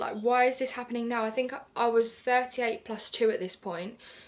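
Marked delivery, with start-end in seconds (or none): none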